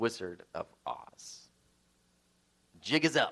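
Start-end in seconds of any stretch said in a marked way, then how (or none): 0.0-1.5 feeble, frail, breathy, whispery near-whisper. Retelling how the man pulls away from the microphone and finishes, imitating a frail voice. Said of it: "in his own frail voice".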